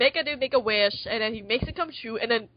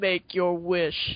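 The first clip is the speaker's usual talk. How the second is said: low, creepy, suave, smooth villain voice; 4 semitones lower than usual. Describing a villain character's voice, the speaker shows how he talks: Palpatine-style villain voice. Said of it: "Where he talks like this".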